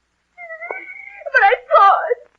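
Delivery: high, loud, hysterical scream. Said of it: "I thought I heard you scream".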